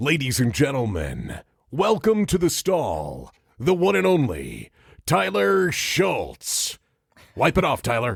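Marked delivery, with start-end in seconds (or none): 0.0-6.8 very slow, very drawn-out showman announcer voice. Introducing a guest, booming announcer voice. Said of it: "I love when Al goes into his uh, announcer voice".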